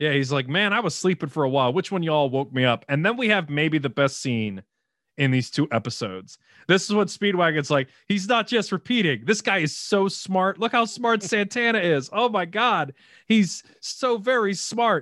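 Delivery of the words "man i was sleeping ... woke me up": plain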